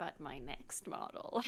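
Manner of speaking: soft, slow, smug little evil laugh. Chatting with another speaker about models, with a little evil laugh. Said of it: "with a little evil laugh almost".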